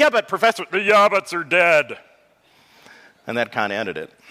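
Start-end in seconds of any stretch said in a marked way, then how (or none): 0.0-2.0 high, cartoonish, frog-like puppet voice. Recalling a man from high school addressing the professor, in a Kermit the Frog-like voice. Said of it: "kind of Kermit the Frog".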